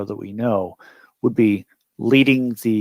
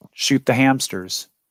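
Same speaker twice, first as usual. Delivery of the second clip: ordinary delivery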